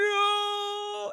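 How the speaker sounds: very high, shrill, stretched-out, drawn-out scream. Retelling a film trailer scream: imitating Voldemort's scream. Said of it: "they use the same "no."".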